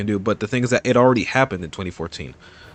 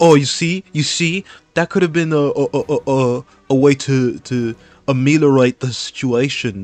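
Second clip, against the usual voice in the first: bad put-on British accent, loud and slow; 4 semitones higher, 6 dB louder than usual. Retelling what a character said in a courtroom scene: horrible british accent. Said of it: "my British accent is horrible".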